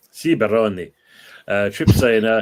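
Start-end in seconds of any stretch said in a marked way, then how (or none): 0.1-0.9 put-on Italian accent. Asked to try his Italian accent, he replies in an Italian accent. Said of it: "Italian accent".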